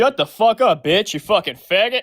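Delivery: angry yelling outburst. Answering a host's question, then snapping at another speaker: angry outburst. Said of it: "I'm a little angry right now".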